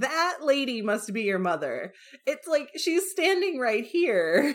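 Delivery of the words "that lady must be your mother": put-on lofty, condescending dowager voice. Retelling how a dowager pointed at the mistress of the house: imitating a condescending dowager. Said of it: "How more condescending could you be?".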